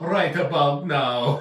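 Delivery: very loud, booming, mocking put-on Jamaican accent. Imitating a podcast host who does a jamaican accent: imitating a put-on jamaican accent. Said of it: "when he's doing the Jamaican accent".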